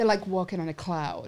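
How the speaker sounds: put-on Alberta accent. Quoting a friend who praises her Crocs: imitating Alison's accent. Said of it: "That's a good accent".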